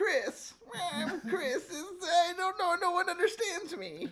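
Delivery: very high, cartoonish boy character voice. Asked to do Family Guy impressions, a guest does the Chris Griffin voice. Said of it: "do your uh, family get impressions?".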